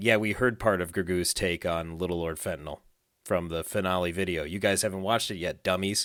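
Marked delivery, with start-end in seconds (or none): none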